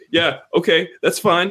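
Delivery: put-on tough-guy bravado, acting tough. Imagining social studies class on Monday with Ken there, acting all tough. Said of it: "I'm going to act all tough".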